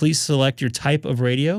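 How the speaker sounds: ordinary delivery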